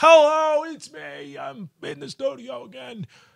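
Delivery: soft, high-pitched, slow delivery.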